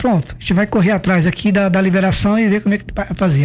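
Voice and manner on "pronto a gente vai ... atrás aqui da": plain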